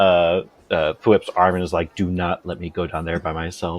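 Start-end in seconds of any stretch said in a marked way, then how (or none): 2.0-3.8 violent, fierce half-whisper, barely audible, very close. Voicing a character grabbing a friend's arm: violent half-whisper in the ear. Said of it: "Just whispers it, like, violently in the ear".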